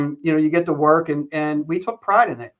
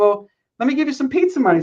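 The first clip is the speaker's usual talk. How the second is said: high, squeaky, squeaking voice; 9 semitones higher than usual. Retell the coach giving you money after you shoveled the driveway, in a squeaky Joe Paterno voice. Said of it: "the squeaky voice".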